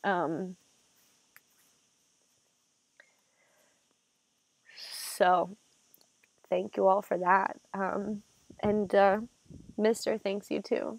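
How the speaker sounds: talking while crying, tearful voice. Thanking viewers for their love and support, crying while talking. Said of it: "I'm gonna stop crying".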